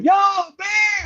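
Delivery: put-on shrill, very high screaming yell. Speaker tells of a bear at his tent, retelling someone's scream. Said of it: "And then I hear Chris like screaming".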